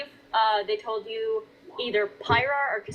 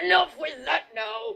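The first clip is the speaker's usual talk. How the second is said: resounding, booming, rough guard's bellow; 7 semitones higher than usual. Game master voicing a guard who catches a player sneaking past, booming voice. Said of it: "you hear a booming voice go".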